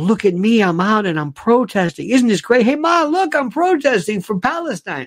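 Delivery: mocking, gleeful, smug show-off voice. Mocking protesters enjoying themselves: mocking imitation of smug protesters. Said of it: "enjoying the whole thing about".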